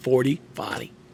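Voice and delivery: forty said with a Boston accent. Explaining a joke's punchline, showing how to say it: boston accent. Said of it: "You gotta use the accent".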